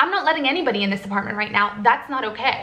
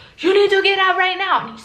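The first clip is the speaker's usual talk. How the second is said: high, loud screaming; 7 semitones higher, 4 dB louder than usual. Retelling a man who shoved the speaker into a door, retelling a man screaming. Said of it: "he's screaming in my face".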